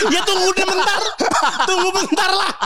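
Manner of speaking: very high-pitched, laughing voice.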